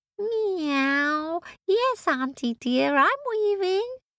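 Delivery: very high, catty, purring cat voice. In a folk tale, the cat answers Baba Yaga, in a catty cat voice. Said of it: "said the cat in a catty sort of voice".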